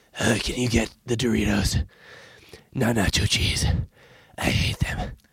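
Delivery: acted goofy, bumbling hero voice played dumb. Joking about playing Batman as a bumbling idiot, doing the Batman voice. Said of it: "doing the Batman voice".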